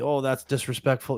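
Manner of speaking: plain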